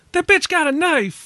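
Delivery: very high, acted screaming outburst. Recalling an audience member at a film screening, retelling a scream. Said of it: "someone screamed".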